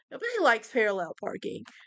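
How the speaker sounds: ordinary delivery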